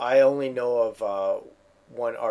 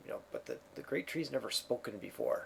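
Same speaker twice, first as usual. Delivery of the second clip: barely breathed, very quiet whisper; 15 dB quieter than usual. Narrating the game scene, voicing a barbarian who leans over; whispering. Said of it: "kind of whispers over and says".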